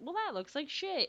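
really high, funny voice. Retelling a comment on an awful cake: Nicole Byer's really high funny voice. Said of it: "in her, like, really high, funny voice".

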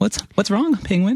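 high voice, heavy with mock concern.

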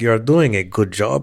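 put-on Russian-accented delivery. Imagining Vladimir Putin's reply over a shot of whiskey, Vladimir Putin Russian accent. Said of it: "Why did you give him a West African accent?".

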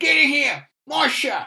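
put-on shrill, very loud, high holler in New Jersey accent. Recalling Johnny's catchphrase from the magazine, imitating Johnny's New Jersey accent. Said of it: "he had that sort of very Sopranos-type voice".

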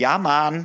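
yelled, high, overdone, put-on Jamaican accent. Retelling a cast trip to Jamaica: imitating Shannon yelling in accent. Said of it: "Shannon's yelling".

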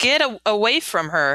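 ordinary delivery

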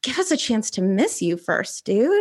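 aside to one listener in normal voice. Retelling what the speaker said to Katie, retelling a quiet remark. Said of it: "I said very quietly to Katie".

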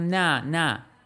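mock yelled at full voice, loud. First-person narrator answering a son at the door, screamed. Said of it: "این بار دیگه فریاد زدم".

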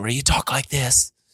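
calm, soothing public broadcaster voice. Speaker describes the voice used on a man's show, then demonstrates: soothing public broadcaster voice. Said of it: "So soothing".

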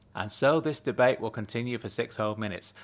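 ordinary delivery

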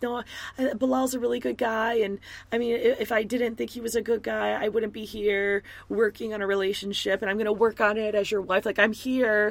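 put-on weepy, tearful, crying pleading. Recapping a wife pleading with her husband bilal, imitating a wife crying. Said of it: "And she's crying".

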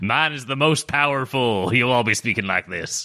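put-on Scottish brogue. Playing a dwarf at the table, claiming the others will talk like this: put-on Scottish accent. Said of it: "we're Scottish".

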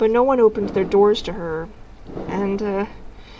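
ordinary delivery

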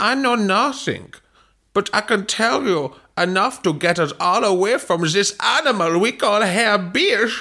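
put-on high-pitched voice with a German accent. A player voices a character in a group story: Slints voice, German accent. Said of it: "that's what they sound like in Hanover".

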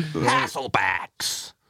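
put-on American accent. Showing how a word would have sounded in a put-on american accent. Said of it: "more fun to say Hasselbacks in that voice".

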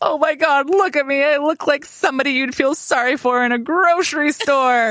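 high, half-laughed, put-on delivery. Retelling what the speaker said looking in the mirror, retelling a laughing remark. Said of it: "i was like kind of laughing".

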